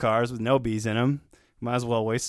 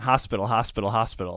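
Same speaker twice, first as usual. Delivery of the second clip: usual speaking voice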